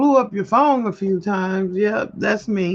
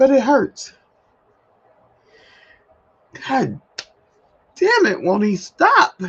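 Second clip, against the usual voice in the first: choked-up, tearful, pitched-up crying speech; 5 semitones higher, 3 dB louder than usual. A speaker talking about something that hurts, crying while talking. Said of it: "this should not be making me cry right now".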